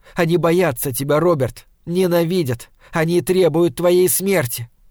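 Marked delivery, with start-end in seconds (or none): none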